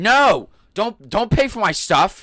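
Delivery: put-on, absolute screaming, shrill and very high. Retelling a guy at the register yelling: imitating someone screaming. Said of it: "absolute screaming".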